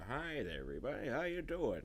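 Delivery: put-on voice of an elderly gentleman. Speaker retells trick-or-treating in an old man costume; old man voice. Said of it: "I was going all I did the voice".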